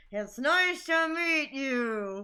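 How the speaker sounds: very slow, forced out through gritted teeth. Retelling a character greeting someone with a forced grin: imitating talking through clenched teeth. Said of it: "clenching her teeth and, like, looks super awkward".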